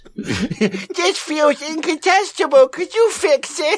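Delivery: put-on squeaky, very high babyish voice. Repeating a man's quoted request after asking about it: baby voice. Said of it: "Did he say it in a baby voice?".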